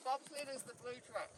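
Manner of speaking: soft speech through a mouthful of food. Passing on a tip about the route while eating, speaking with mouth full. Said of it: "Can you tell me without your mouth full of food?".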